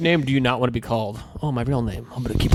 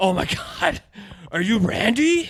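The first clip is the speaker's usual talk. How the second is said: mock winded, high, gasping, out-of-breath words; 9 semitones higher than usual. Retelling a guy who came running up: imitating someone out of breath. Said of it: "out of breath".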